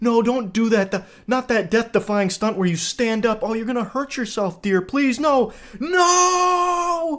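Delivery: high, frantic, panicky pleading, "no" stretched. Mimicking a woman trying to calm someone who stands up: imitating a panicking woman. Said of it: "panicking when he stands up".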